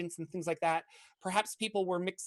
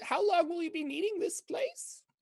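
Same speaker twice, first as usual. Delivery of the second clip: put-on very high-pitched elderly woman's voice; 12 semitones higher than usual. Narrating a scene, voicing the old lady who asks Siren about the room. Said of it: "And the old lady goes up to you".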